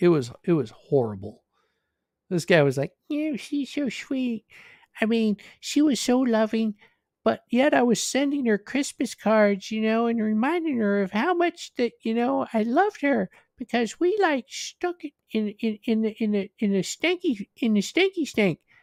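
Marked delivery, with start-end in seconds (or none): 3.1-18.6 high, whiny, small mocking voice. Imitating a guy who sent Christmas cards: imitating a whiny voice. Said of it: "that little whiny bitch voice that he has".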